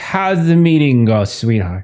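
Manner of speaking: acted drunk-sounding speech. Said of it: "in a very drunk way".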